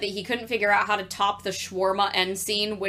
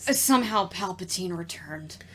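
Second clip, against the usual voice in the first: put-on resigned line reading; 4 dB quieter than usual. Quoting a line with a mock-resigned Oscar Isaac delivery. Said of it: "I say that with the same resignation that Oscar Isaac does".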